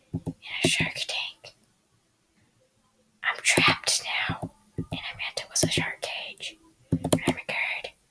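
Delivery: whispered voice. Playing a game as a trapped shark, in a whisper voice. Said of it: "why am i talking in a whisper voice".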